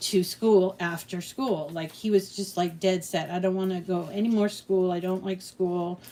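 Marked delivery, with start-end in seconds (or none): none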